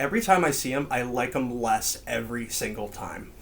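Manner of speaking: ordinary talk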